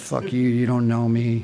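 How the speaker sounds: put-on mumbling under breath. Retelling the reply to her in a one-on-one meeting, retelling a mumble under breath. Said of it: "mumbled under my breath".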